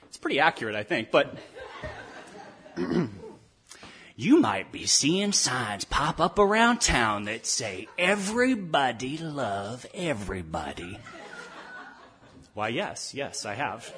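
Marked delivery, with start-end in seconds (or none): 1.1-10.9 put-on folksy Texas drawl, slower. Retelling a Dallas station's story the way its reporter narrated it, in a folksy Texas drawl. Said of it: "narrated by a reporter with a folksy Texas drawl".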